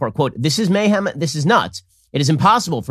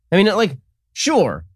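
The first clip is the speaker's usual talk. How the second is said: usual speaking voice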